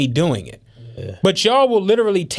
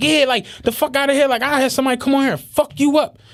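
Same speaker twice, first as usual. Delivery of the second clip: put-on yelling, higher; 6 semitones higher than usual. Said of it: "I could tell she's yelling at me".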